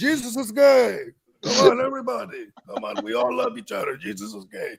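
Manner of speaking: crazy put-on Eastern European accent. Retelling how a man said his line from the text, crazy Eastern European accent. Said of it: "you had like this crazy Eastern European accent".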